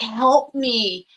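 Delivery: really raspy ghostly voice, calling out. Retelling a voice that came through one early morning; raspy voice. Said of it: "I heard this really raspy voice come through and says".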